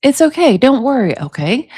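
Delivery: plain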